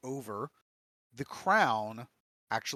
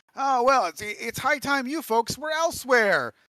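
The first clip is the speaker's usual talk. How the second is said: put-on very loud, very high, tipsy drunken holler; 12 semitones higher, 11 dB louder than usual. Voicing a gnome telling the group it is time to leave, drunkenly. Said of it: "kind of drunkenly is like".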